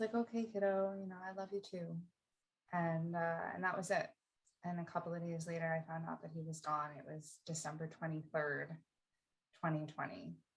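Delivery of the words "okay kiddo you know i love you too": really small, shrunken, tiny voice. Retelling his dad's last words on the phone, in a really small voice. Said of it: "in a really small voice".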